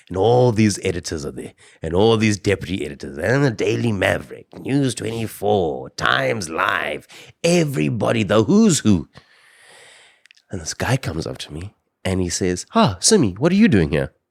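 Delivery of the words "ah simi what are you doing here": patronizing, dismissive, condescending tone. Retelling a man at a conference questioning his presence: imitating a dismissive question. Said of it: "he said it in a way that was like".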